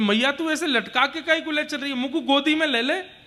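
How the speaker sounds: put-on high, pleading child's voice.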